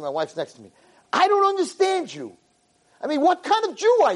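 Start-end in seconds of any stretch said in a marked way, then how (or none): 1.1-4.2 mock very high, wild, swooping angry shriek. Telling a story, the speaker acts out a woman screaming at him in front of everyone. Imitating someone screaming. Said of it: "she starts screaming".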